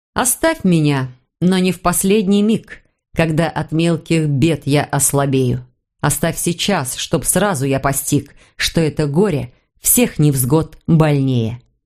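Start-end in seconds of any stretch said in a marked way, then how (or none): none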